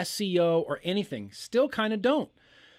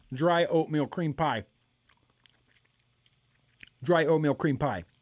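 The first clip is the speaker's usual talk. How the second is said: speaking with mouth full, chewing, lower pitch; 3 semitones lower than usual. During a tasting, finishing a bite of pie, talking with mouth full. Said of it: "Let me finish chewing this".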